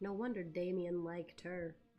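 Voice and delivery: mumbling quietly under breath. Voicing a character reacting to a newcomer: mumbling under breath. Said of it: "I'm gonna mumble under my breath".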